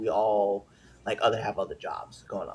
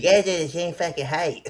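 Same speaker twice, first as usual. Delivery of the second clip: loud and high cartoonish voice; 7 semitones higher, 6 dB louder than usual. Repeating a line after being asked, in a Cartman voice. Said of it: "say it in a fucking Cartman voice".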